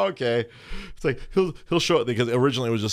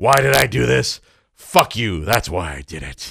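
cranky character voice, louder; 7 dB louder than usual. Speaker breaking out his character for a co-host, in Cranky [name] voice. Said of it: "Cranky [name] sounds like Batman".

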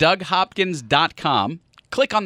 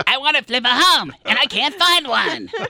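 put-on very high cartoon kid voice; 9 semitones higher than usual. Asked to repeat a caller's words again, in a Cartman voice. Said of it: "I sound like Cartman".

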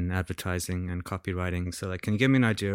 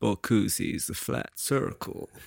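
put-on slow drawling actor voice; 2 semitones higher than usual. Pitching an ad with a Matthew McConaughey line: Matthew McConaughey impression. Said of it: "Okay, you go. You do a Matthew McConaughey".

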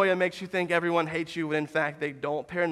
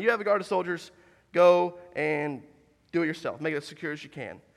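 ordinary talk

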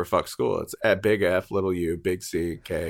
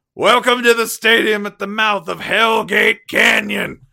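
very high, loud, booming stadium announcer voice; 14 semitones higher, 7 dB louder than usual. Retelling how a stadium announcer greeted the crowd in a blizzard: imitating a stadium announcer. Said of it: "the announcer comes on and goes".

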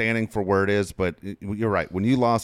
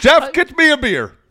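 very loud, very high, drawn-out blaring dad bellow; 11 dB louder than usual. Imitating a coach as a dad at home: loud Brian Dutcher impression. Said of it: "with that loud voice and that smile".

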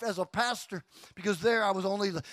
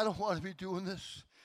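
mock weepy, tearful, pleading cry; 9 dB quieter than usual. Retelling what kids would say at the altar call: imitating kids crying out. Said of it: "And they would cry".

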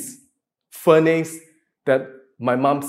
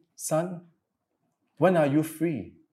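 put-on sweet voice, quieter; 8 dB quieter than usual. Retelling a phone call from mom: imitating mom's sweet voice. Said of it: "the sweetest, sweetest voice".

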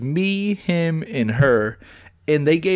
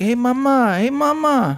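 very high-pitched, very slow, drawn-out delivery; 9 semitones higher than usual. Retelling how a waiter at a restaurant talks, imitating a waiter saying mama. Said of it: "the fucking waiter be like".

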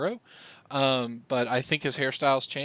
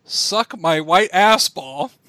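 put-on very loud, all-out drunken yell, pitched up; 5 semitones higher, 10 dB louder than usual. Retelling a friend yelling a movie quote at a stadium: retelling a drunk yell. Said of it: "he yells at the top of his drunk lungs".

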